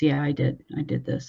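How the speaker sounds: quiet, mock emotionless, totally flat monotone. Describing how a man admitted to a stabbing, imitating a totally flat voice. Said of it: "Totally flat".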